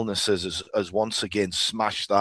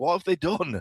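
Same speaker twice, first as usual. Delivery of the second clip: upset, emotional dismay, higher; 8 semitones higher than usual. Retelling seeing an old court turned into a dance studio: imitating own upset dismay. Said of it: "I was quite emotional about it".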